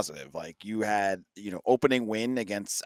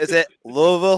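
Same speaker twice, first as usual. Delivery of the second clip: pitched-up Boston accent on "Louisville"; 8 semitones higher, 3 dB louder than usual. Trying the local pronunciation of louisville in a boston accent. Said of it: "can I do it from a Boston accent".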